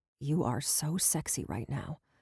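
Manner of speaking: soft, hushed growl under the breath. Reading fiction aloud, Brendan speaks to the narrator: soft growl. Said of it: "he says with a soft growl".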